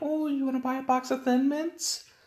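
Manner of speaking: very high, little voice. Comparing his own voice to another YouTuber's, in a little Girl Scout voice. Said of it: "I got like this little Girl Scout".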